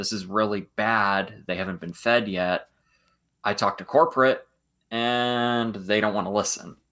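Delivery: drawn-out, play-acted, sarcastic grumble. Retelling a ride video where the raptor handler complains: imitating sarcastic Owen. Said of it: "a really sarcastic Owen".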